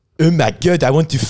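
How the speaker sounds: put-on French accent. Retelling a man's reaction after being shown an Instagram photo: put-on French accent. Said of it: "goes like this in the French accent".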